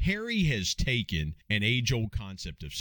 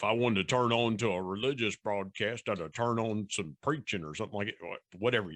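best-effort put-on West Virginia country accent. Voicing what a listener might say, in a West Virginia voice. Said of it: "in the best West Virginia voice I can do".

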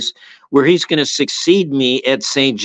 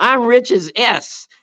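yelling, higher pitch; 10 semitones higher than usual. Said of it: "he yells back at the kid".

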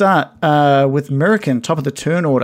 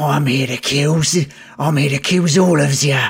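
monstrous spider creature voice, faster. Narrating a fight scene, the narrator voices the spider creature. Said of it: "the voice from this spider creature says".

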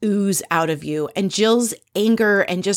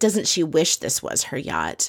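put-on muttered aside, under the breath, lower; 4 semitones lower than usual. Retelling a reality show scene, a jealous remark: imitating Jill muttering under her breath. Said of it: "under her breath and says".

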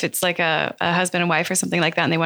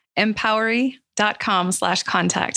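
repeated more clearly and distinctly; 3 semitones higher than usual. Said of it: "Let me say that one more time".

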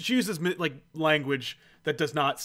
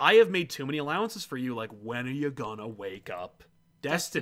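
plain

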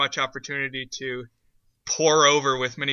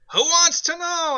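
high-pitched yell, pushed right through the nose; 4 dB louder than usual. Retelling how Pee-wee answered Oprah, imitating Pee-wee's nasal yell. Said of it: "he's like yelling extra nasally at Oprah".

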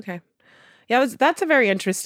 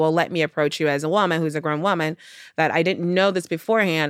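plain

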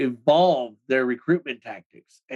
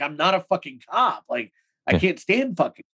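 tearful, crying, desperate pleading; 3 semitones higher than usual. Retelling being threatened with a gun, reenacting pleading while crying. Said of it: "here I am pleading and begging and I'm crying".

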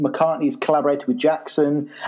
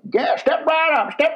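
put-on very high, plain generic American accent; 12 semitones higher than usual. Recapping the story, imitating Paul doing the most generic American voice ever. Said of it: "Like the most generic American voice ever".

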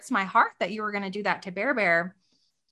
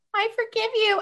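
put-on tiny, very high little-kid voice; 13 semitones higher than usual. Retelling what a five-and-a-half-year-old said after getting an apology, imitating Landon's tiny voice. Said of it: "he has a little tiny voice".

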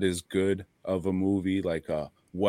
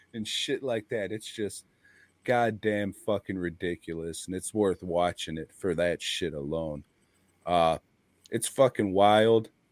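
normal talking voice

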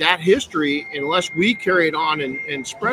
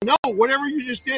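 put-on grandma voice, high, hollering, bossy; 9 semitones higher than usual. Retelling climbing on the roof: imitating grandma yelling. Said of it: "and then she'd go".

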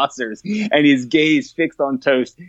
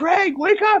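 raised shouting voice. Retelling a prank where someone started yelling: imitating someone yelling. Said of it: "started yelling".

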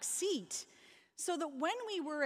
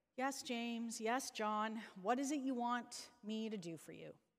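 mock weary, low, soft, worn-out voice; 4 semitones lower, 5 dB quieter than usual. Retelling James and John's request, imitating a weary Jesus. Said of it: "you can almost hear the weariness in Jesus' voice".

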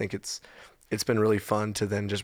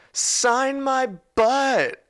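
put-on drunken woman's very high, shrill hollering; 7 dB louder than usual. Telling about a woman who climbed on stage, the speaker is retelling a yell.

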